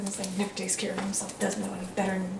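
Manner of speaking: very quiet, low mutter under the breath. Retelling a man muttering as he gathers up the coins, muttering under his breath. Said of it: "starts muttering under his breath".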